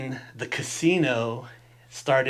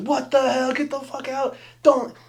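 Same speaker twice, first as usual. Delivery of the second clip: raised, high-pitched yelling by a group; 12 semitones higher, 4 dB louder than usual. Retelling a crowded table chasing off a kid: imitating a table yelling. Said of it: "everybody yelling at this kid".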